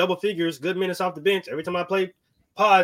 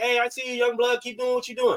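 put-on yelling, higher pitch; 5 semitones higher than usual. Acting out veteran players encouraging the young ones: imitating old players yelling. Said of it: "the old guys is yelling from the back".

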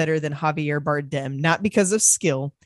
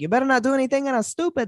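put-on Cuban accent, pitched very high; 9 semitones higher than usual. Showing how Cuban people talk: imitating a Cuban accent. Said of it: "they talk like that".

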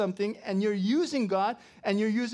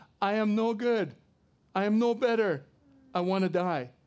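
put-on, slow, burnt-out, hopeless, despairing lament. Retelling a prophet's words to God in the desert: imitating a depressed man. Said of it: "he's so depressed that he wants to".

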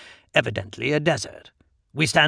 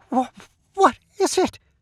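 strangled, choked, unbelieving voice pitched way up; 12 semitones higher than usual. Oswalden sees a glaring portal open, choked, unbelieving. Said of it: "Oswalden's voice is choked, unbelieving".

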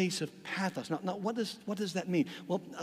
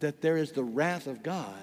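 normal talking voice

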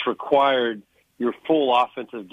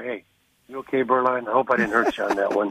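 polite whisper, put on. Retelling what a defensive player said after a hit: imitating Kevin Carter whispering. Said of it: "he would kinda whisper in my ear".

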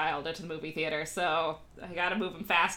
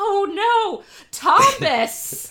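put-on shrill, piercing, very high, full-blast toddler shriek; 10 dB louder than usual. Retelling a toddler's reaction to a movie's final scene, imitating John screaming. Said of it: "John just screams out".

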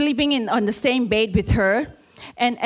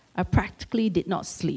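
ordinary talk, nothing marked

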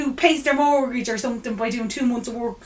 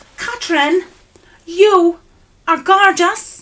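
put-on Cork accent, high and loud; 6 semitones higher, 6 dB louder than usual. Retelling a compliment from someone at a party, Cork accent. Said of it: "should I do the accent?".

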